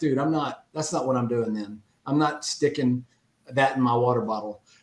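ordinary talk, nothing marked

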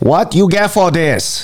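high put-on Chinese accent. Speaker voices the voice in their head while discussing charity: put-on Chinese accent. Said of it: "that's a Chinese voice I have in head".

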